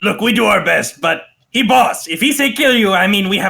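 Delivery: put-on, high-pitched goblin voice. Voicing a second goblin explaining the boss's orders: goblin voice. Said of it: "the other one goes".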